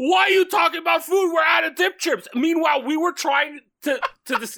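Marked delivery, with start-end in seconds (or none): 0.0-2.3 sudden, frantic screaming outburst. Retelling how someone screamed on last week's podcast: imitating Carl screaming. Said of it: "you just started screaming, going like".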